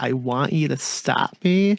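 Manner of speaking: put-on soft whisper. Retelling a movie scene where the Hitcher answers Jim: whispering as the Hitcher. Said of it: "softly just whispers".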